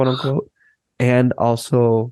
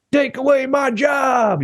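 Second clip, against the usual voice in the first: very high, very slow, squeaky cartoon voice; 13 semitones higher than usual. Quoting the "they took our jobs" line: South Park voice. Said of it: "in the South Park voice".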